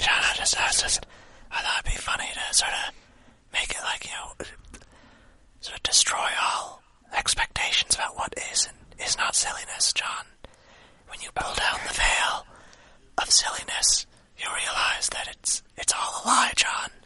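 whispered.

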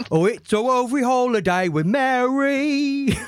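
laid-on bad Cockney accent, Mary drawn out.

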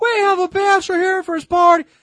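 high, shrill, loud, big-voiced announcing yell. Telling of a brother's bachelor party, a woman announcing him, retelling a loud yell. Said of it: "she yells the big loud voice".

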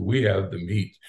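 very deep commercial announcer voice. Speaker quoting a fast-food ad while discussing school choice, in Arby's commercial deep voice. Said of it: "the guy with the very deep voice says".

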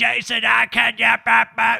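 put-on raspy smoker's scream. Retelling a lady at an advertising agency screaming on the phone: imitating a screaming raspy smoker's voice. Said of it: "scream at me with her, with her raspy smoker's voice".

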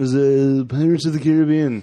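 put-on drunken talking voice. Answering a movie trivia question: Johnny Depp impression. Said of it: "That was my Johnny Depp impression".

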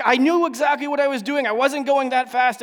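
acted yelling. Retelling what he yelled back before driving off, retelling a yell back. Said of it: "And he yelled back".

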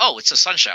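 ordinary talk

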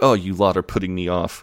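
ordinary delivery

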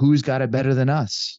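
light, put-on coach-style screaming. Retelling how a coach ends every practice: imitating Jim Harbaugh screaming. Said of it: "when he screams out".

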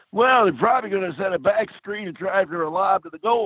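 very high, rasping basketball coach voice. Speaker recalls doing both voices, answering as the coach: raspy coach voice. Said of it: "He had kind of a raspy voice like this".

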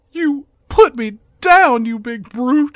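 tearful, high, loud sobbing, pleading. Retelling a movie scene going for sympathy, mock crying. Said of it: "she starts crying, and she says".

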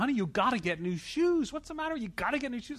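very high-pitched, shrill, put-on yell. Retelling his wife telling him to get new shoes: imitating his wife yelling. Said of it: "my wife is yelling at me".

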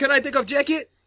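put-on Russian accent. Retelling a comedy set, imitating Robin Williams' Russian accent. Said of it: "he's in character the whole time".

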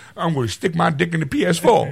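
comic voice with pitch pushed very high. Joking about the new console as Tracy Morgan: Tracy Morgan voice. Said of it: "I'm Tracy Morgan".

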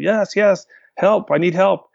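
mild, held-back, high yell, stretched out. With a tornado coming, answering a driver who offers help: retelling own yell. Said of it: "And I'm yelling".

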